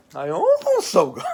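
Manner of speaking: loud, swooping cartoon voice. Greeting viewers in a video about new DVDs, sounding like a children's cartoon character. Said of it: "I sound like like a cartoon character".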